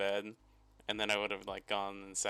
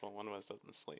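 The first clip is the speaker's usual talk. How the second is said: put-on mutter under breath, much quieter; 8 dB quieter than usual. Recounting being told one must sleep on the floor, retelling an under-breath mutter. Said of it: "under under my breath".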